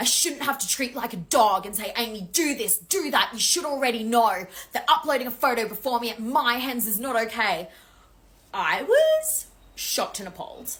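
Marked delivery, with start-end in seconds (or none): 0.0-7.7 loud, scolding screaming tirade. Retelling how the bride screamed at her on the balcony: imitating the bride screaming. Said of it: "she starts screaming at me going".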